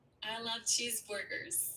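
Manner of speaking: soft, put-on attempt at American accent. Asked by the host for her best American accent, the contestant tries an attempted American accent. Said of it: "best American accent. Say".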